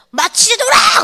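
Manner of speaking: high, loud yell in Pyongan dialect.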